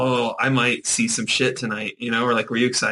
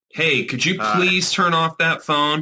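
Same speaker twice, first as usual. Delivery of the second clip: put-on pushy, demanding, aggressive tone, slow; 4 semitones higher than usual. Guessing how a moviegoer asked someone to turn off a phone: imitating an aggressive request. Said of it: "Was it that aggressive?".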